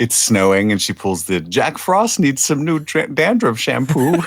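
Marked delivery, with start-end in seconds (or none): 1.4-4.2 very high, squeaked-up put-on character voice. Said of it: "I did an [name] voice for Selvig".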